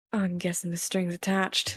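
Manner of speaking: quiet muttering under breath. Voicing a character answering a creature's offer, muttering under her breath. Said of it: "she'll mutter under her breath".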